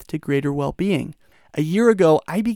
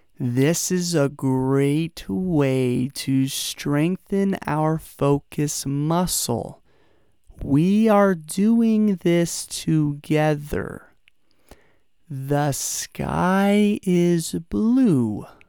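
slowed-down pace. Leading listeners in saying the words together at the same time, talking slower. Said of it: "I'm now talking slower".

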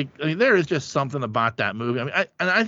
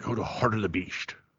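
bad put-on Scottish voice, lower and quieter; 5 semitones lower, 8 dB quieter than usual. Quoting the father from a movie scene: horrible Sean Connery impression. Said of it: "That's a horrible Connery impression".

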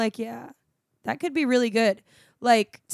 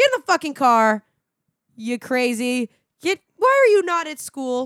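loud screaming, acted out; 4 semitones higher, 6 dB louder than usual. Retelling rolling down the car window at a kid; retelling screaming at a kid. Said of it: "I'm screaming the kids down".

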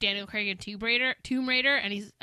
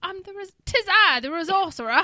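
put-on English accent, much higher; 9 semitones higher, 8 dB louder than usual. Among fellow editors, mimicking how someone says a word; English accent. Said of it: "shake off speaking in an English accent".

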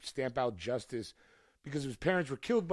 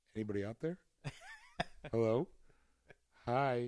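lonely voice calling out; 3 dB quieter than usual. Picturing himself alone with nobody to talk to: imitating himself alone at a microphone. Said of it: "It would just be me going".

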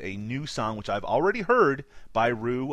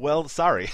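fake American accent, higher; 4 semitones higher, 4 dB louder than usual. Apologizing to first-time listeners for spoilers: put-on american accent. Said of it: "I did my American sorry".

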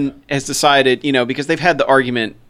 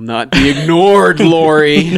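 slow cat voice with a drawn-out, stretched name; 4 dB louder than usual. Retelling a movie scene where the cat Max watches through the door: imitating Max the cat. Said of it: "he's just looking in the door like".

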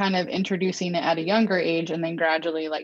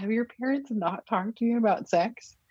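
put-on whisper, higher pitched; 5 semitones higher than usual. Retelling a question put to a niece during a movie: imitating own whisper. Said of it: "I whispered".

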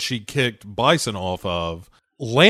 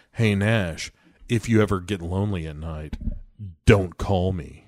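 mock awful flirty tone, lower and quieter; 5 semitones lower, 5 dB quieter than usual. Retelling a movie scene where a detective flirts: mock flirty tone. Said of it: "in their awful flirting".

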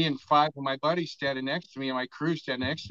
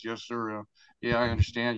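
sorry, regretful, sorrowful tone; 4 semitones lower than usual. Retelling a reply to the judge in court: imitating Craig sounding sorrowful. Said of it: "he's real, like, you know, sorrowful like this".

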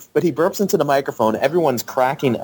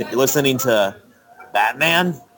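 slow, pausing delivery. Retelling how Thomas Jane read the line: imitating Thomas Jane's long pauses. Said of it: "doing long pauses like William Sh-".

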